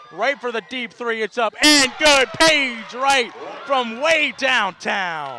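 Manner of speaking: loud, high-pitched, excited shout.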